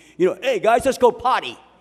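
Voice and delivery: put-on loud, high-pitched New Jersey accent, guy talk. Recalling a batter from New Jersey talking to the team, in a New Jersey guy accent. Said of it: "he talked like New Jersey type guy like this".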